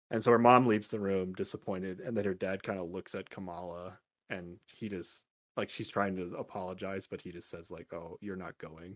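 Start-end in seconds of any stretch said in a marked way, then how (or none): 7.9-8.9 imitated very sad voice, much quieter. Recapping a scene, quoting the dad before he walks out, in a very sad voice. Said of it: "in a very sad voice".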